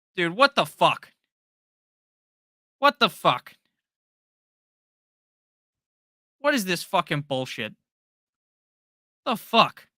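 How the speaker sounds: loud, high-pitched, furious ranting outburst. Talking about sunday night football, suddenly getting mad: angry outburst. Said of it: "Sorry for getting mad".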